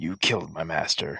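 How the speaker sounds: growling. Game master speaks as the unimpressed figure, growling at the player. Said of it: "he kind of growls growls at you".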